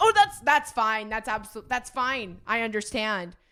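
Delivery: irritated, sarcastic, loud, slow and annoyed. Retelling a woman's reply when there was no cash, imitating her annoyance. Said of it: "Like she was so mad at me".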